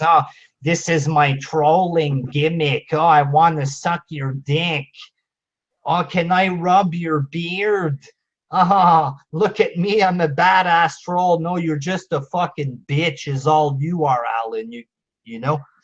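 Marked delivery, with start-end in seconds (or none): 0.0-11.4 put-on derisive, taunting, ridiculing caricature voice. Mocking a rival who thinks he's a big bad troll: mocking imitation of Alan. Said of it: "this guy thinks he's a big bad troll".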